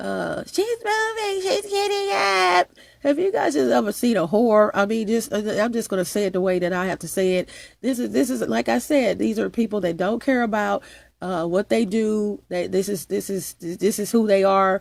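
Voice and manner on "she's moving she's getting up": high, mocking announcer voice. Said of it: "you guys, I'm telling you".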